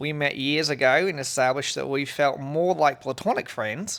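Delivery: put-on, fake Australian accent. Reading a written message aloud in a put-on australian accent. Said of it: "I feel like you actually usually have a, a better Australian accent than that".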